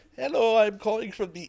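put-on German accent, slightly high-pitched. Asked to show how a call would have sounded: German-sounding accent. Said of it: "You sound like a German".

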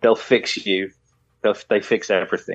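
ordinary delivery

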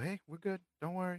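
soft reassuring tone. Showing the calm voice used at work to reassure people, calm reassuring voice. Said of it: "I have to like be like the calm voice".

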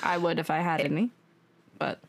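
low, genuinely sad-sounding voice. Talking about an upcoming episode, the speaker says this sounding so sad. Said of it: "The way you said that sounded so sad".

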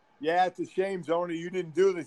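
ordinary talk

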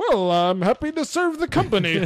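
far too cheerful, high. Imitating a movie villain's line delivery: imitating John Travolta, way too cheery. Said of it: "He's way too cheery in this movie".

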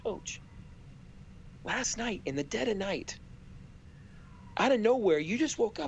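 discreet, courteous, confiding stage whisper. Retelling how a man leaned over to the coach: put-on polite whisper. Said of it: "whispers politely to him and says".

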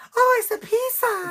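put-on high-pitched, loud, shrill voice with Spanish accent. Showing the listener how she talked when pizza was delivered, imitating a woman from Spain. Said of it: "Literally how she talked".

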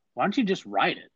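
plain

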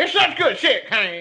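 high-pitched, angry, irritated declaring tone. Doing an impression of Jim Ross: pissed off Jim Ross voice. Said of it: "I'll go back to pissed off Jim Ross".

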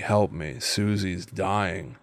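low, quiet, flat, bored monotone. Demonstrating the creepy payphone message idea, in a bored monotone. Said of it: "I love the idea of it being a monotonous voice".

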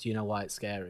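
plain

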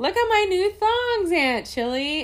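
mock very high, overjoyed and gleeful exclamation. Retelling Muffin answering Aunt Trixie, imitating Muffin joyfully. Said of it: "very joyfully".

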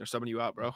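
soft deadpan with no emotion. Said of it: "deadpan, no emotion, doesn't care".

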